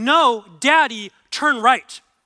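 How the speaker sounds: loud, slow, insistent tone. Retelling a young daughter in the car, imitating her insisting. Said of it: "very strongly".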